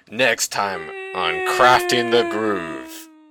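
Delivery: big, dramatic teaser-style announcer narration. Announcing next time on their show in a Dragon Ball Z announcer voice. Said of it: "I'm trying to do that voice actor or the announcer from Dragon Ball Z".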